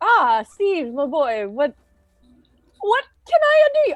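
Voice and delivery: put-on acted, very drunk, tipsy voice. Playing a captain greeting steve, acting drunk. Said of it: "I'm very drunk at this point".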